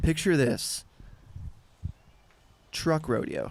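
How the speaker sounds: super serious, dead-serious delivery with grave pitch. Retelling a pitch someone made in the dark, imitating someone super serious. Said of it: "like, super serious".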